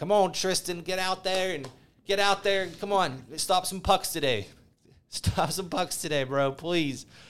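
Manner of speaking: nagging, high yell. Retelling yelling at a player during games: imitating yelling at someone. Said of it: "yelling at him like he's my brother".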